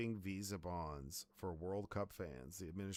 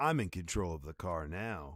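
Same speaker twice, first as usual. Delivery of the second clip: creepy put-on ai voice; 2 semitones lower, 7 dB louder than usual. Speakers joke about an AI assistant in the car; creepy Gemini AI voice. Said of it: "That'd be such a creepy voice".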